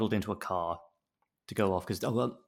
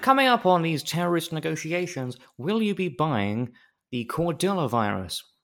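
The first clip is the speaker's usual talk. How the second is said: pitched-up, raised presenter voice, loud announcing delivery; 6 semitones higher, 5 dB louder than usual. Imitating a radio presenter as a negotiator: Jeremy Vine voice. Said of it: "now I'm imagining him as Jeremy Vine".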